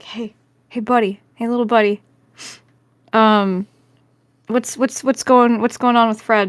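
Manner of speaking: whispering. Playing a character, whispering to a chicken named Gale: whispering to a chicken. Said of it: "I'm gonna whisper to Gale and just be like".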